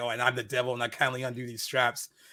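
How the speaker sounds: ordinary delivery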